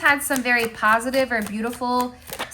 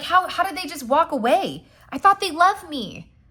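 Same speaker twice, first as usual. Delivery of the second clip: dumbfounded, shocked, stumbling disbelief; 4 semitones higher than usual. Acting out how the other person reacts to being left: imitating someone shocked. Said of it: "they're shocked".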